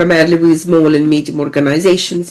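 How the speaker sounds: plain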